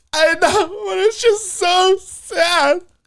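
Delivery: very high, slow, drawn-out wailing through tears. Retelling what a crying woman said leaving a sad show: imitating someone sobbing. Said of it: "screaming, wailing, crying, snot-nosed".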